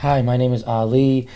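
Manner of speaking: calm, composed, very slow, polite voice. Speaker retells going door to door, imitating own calm voice. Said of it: "I was talking like so calm".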